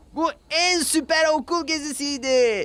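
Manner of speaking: shouting. Narrator reads the children at the end of the school trip, shouting. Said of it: "diye bağırdı çocuklar".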